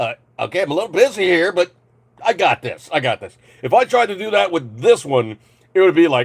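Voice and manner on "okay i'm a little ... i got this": put-on busy, overloaded phone voice. Describing a phone running thirty programs at once: voicing a busy overloaded phone. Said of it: "the phone's just going".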